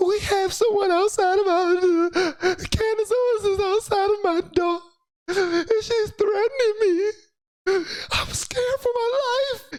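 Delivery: very high-pitched put-on sobbing voice. Retelling how a woman faked crying about someone at her door: imitating fake crying. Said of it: "she was faking like she was crying".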